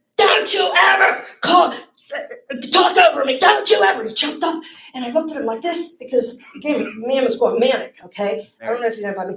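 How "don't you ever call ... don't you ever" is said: very high, loud, drawn-out, deliberate scream. Retelling a man who jumped up at her and her husband; retelling a scream.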